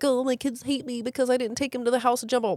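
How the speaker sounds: tearful, sobbing, high-pitched complaining voice. A parent recounts feeling unappreciated by their kids, imitating own crying. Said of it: "I'm crying".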